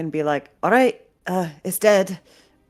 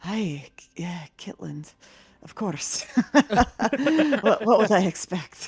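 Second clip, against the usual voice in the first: hushed murmur under the breath; 3 semitones higher than usual. Narrating a scene, the speaker voices a character murmuring under her breath. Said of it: "murmurs under her breath".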